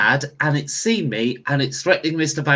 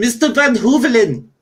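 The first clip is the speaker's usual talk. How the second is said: high, calling-out shout; 9 semitones higher, 4 dB louder than usual. Player's character opens a door and calls for mr. van hoovelen: shouting. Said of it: "I'm going to shout".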